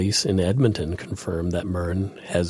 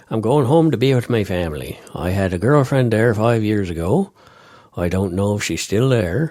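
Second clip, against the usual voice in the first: raised, put-on Newfoundland accent; 2 semitones higher, 5 dB louder than usual. Reading out the acquitted suspect's quote about going home: Newfoundland accent. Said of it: "so I get to do the accent again".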